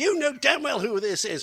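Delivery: mock very high, shrill, loud, enraged woman's voice. Retelling angry phone calls from a stranger, imitating an enraged woman. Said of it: "phone calls from enraged women".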